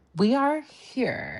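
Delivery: put-on babyish baby voice. Mimicking how she talks to the group, imitating her baby voice. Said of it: "that baby voice".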